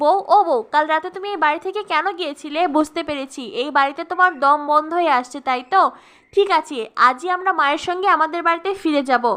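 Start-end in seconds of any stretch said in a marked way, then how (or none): none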